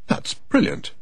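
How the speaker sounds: very high, breathy, breathed out. [name] responds after Kate finishes telling a joke: breathed out. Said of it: "[name] breathed".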